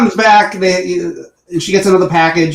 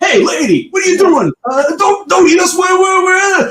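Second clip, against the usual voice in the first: very high-pitched, put-on New York accent; 11 semitones higher than usual. Retelling a talking banana asking a woman: New York accent. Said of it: "is from New York 'cause he's like".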